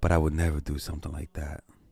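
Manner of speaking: sexy, suggestive, sultry voice. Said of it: "she changed up her voice to more of a sexual voice".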